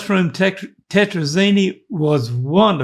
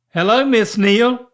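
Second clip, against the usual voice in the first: put-on woman's voice, disguised, higher; 4 semitones higher than usual. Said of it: "use a woman's voice".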